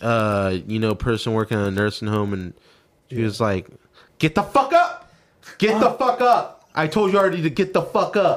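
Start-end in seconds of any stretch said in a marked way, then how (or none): 4.2-8.4 mock furious, bullying angry yell, pitched up. Retelling what a nursing home worker said, imitating someone yelling angrily. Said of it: "And she's talking like that".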